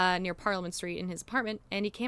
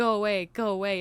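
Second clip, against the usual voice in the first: hissing creature voice, louder; 6 dB louder than usual. Speaker retelling what a creature said to a man, in a hissing creature voice. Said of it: "in a hissing voice".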